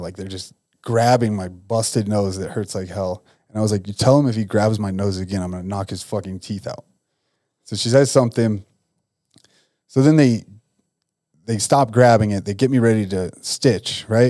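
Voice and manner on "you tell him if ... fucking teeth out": plain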